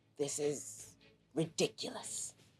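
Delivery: muttered under breath. Playing a character falling down an endless pit, muttered under breath. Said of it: "she says under her breath".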